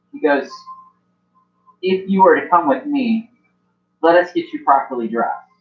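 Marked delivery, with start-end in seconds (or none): none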